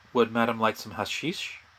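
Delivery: hushed, discreet, confidential voice. Voicing a character who pours tea, then discreetly asks. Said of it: "he discreetly asks".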